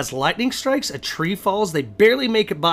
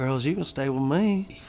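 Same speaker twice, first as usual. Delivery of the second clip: laid-back, leaned-back drawling voice; 3 semitones lower, 5 dB quieter than usual. Retelling a man inviting girls to stay with him, in Matthew McConaughey voice. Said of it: "like in a Matthew McConaughey voice".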